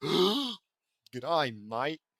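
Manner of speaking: put-on Aussie, Australian accent. Player who says they'll start talking in an Australian accent: Australian accent. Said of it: "start talking in an Australian accent".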